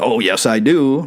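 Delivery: ordinary talk, nothing marked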